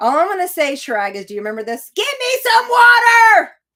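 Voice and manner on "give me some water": very high, very loud, shrill, drawn-out voice. Mocking a friend's demand for water at a campsite: mocking Heather's demand. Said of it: "I had to mock Heather".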